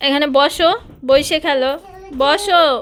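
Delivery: firm, loud, high-pitched delivery.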